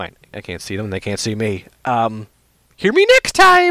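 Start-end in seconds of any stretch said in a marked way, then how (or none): 1.8-3.7 bad, very high, belted booming voice, swooping and slow. Host signs off to listeners, in a bad Mario impression. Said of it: "that's a terrible Mario impersonation".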